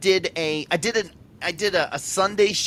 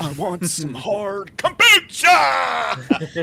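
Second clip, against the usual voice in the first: swooping, stretched, loud delivery; 4 dB louder than usual. Joking around before recording starts: horrible Nicolas Cage impression. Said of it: "That's a horrible Nick Cage one".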